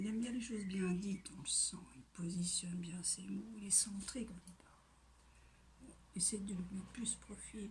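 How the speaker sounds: soft, unvoiced whisper.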